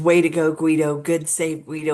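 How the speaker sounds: ordinary delivery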